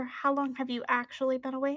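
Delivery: hushed whispering, very quiet. A character whispers in another's ear, trying not to be overheard: whispering very quietly. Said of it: "And she's going to whisper".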